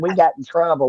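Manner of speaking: plain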